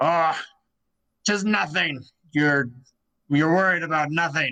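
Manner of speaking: fantasy dwarf character voice. Game narrator voicing a dwarf answering a companion, in a dwarvish voice. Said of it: "you hear a kind of a dwarvish voice".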